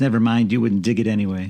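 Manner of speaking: ordinary delivery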